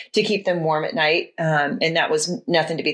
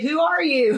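high, laughing, mock startled voice. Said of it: "he takes the time to say".

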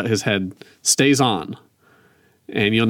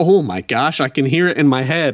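usual speaking voice

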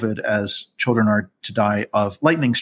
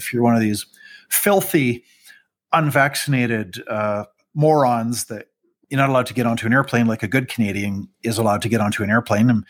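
ordinary talk, nothing marked

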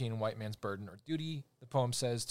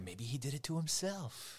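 creepy, sinister put-on voice; 3 semitones higher, 4 dB quieter than usual. Retelling a movie scene, quoting a line in a creepy Jack Nicholson voice. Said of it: "with his creepy Jack Nicholson".

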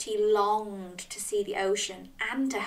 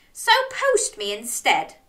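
ordinary delivery, nothing marked

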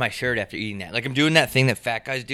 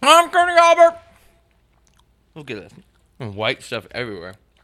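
mouthful of peanut butter, louder; 8 dB louder than usual. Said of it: "I have a bunch of peanut butter in my mouth".

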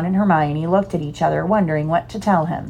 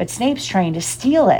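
ordinary delivery

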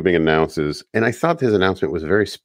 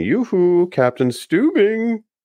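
very high, cartoonish character voice; 13 semitones higher than usual. Recapping a scene where a character yells to the captain, in his best Scarecrow voice. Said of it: "in his best Scarecrow voice".

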